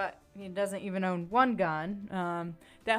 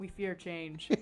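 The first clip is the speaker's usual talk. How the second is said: put-on deadpan delivery, much quieter; 10 dB quieter than usual. Retelling Garth's reply when asked about a change for the show: Garth-style deadpan. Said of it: "And very deadpan too".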